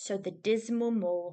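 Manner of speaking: ordinary delivery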